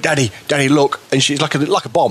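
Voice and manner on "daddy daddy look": acted, mock-startled voice, freezing up. Father retelling how his daughter reacted to a dropped lighter, imitating startled daughter. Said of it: "she froze and went".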